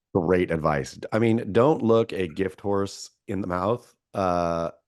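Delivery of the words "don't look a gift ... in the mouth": ordinary talk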